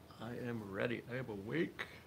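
yawning while speaking. Just starting, having some coffee, yawning while speaking. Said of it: "I yawn as I say I'm awake".

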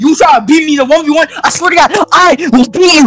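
fired up. Threatening to win a one v one after being asked for energy: more excited. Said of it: "I'll get more excited".

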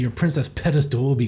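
plain

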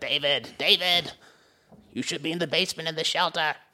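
super camp, flamboyant, high-pitched boss voice. Retelling a movie scene as the boss character: imitating the camp boss character.

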